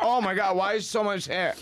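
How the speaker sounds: high, stunned, shocked cry.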